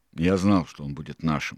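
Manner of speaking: ordinary delivery, nothing marked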